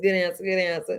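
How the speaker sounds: normal talking voice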